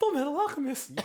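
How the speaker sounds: weird, high, dramatic announcer voice.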